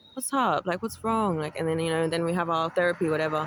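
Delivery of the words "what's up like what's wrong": put-on very gentle, tender tone. Retelling how the Lord spoke to the speaker this morning, imitating a very gentle tone. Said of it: "a very gentle tone of the Lord".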